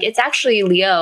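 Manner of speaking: ordinary delivery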